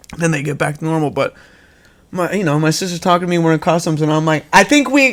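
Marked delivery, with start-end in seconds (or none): 4.6-5.2 high, yelled delivery. Retelling talking to a sister in customs with popped ears: imitating own screaming. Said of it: "I'm screaming".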